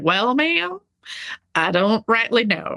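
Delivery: put-on heavy country accent. Retelling what a polite officer student from texas said, in a thick texas country accent. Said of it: "he had like this thick country accent".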